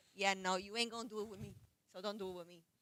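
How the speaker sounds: ordinary talk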